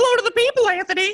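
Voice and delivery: very high, loud cartoon mouse voice. Asked by the host to say hello, the co-host answers in a Mickey Mouse voice. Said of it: "I didn't know Mickey Mouse was here".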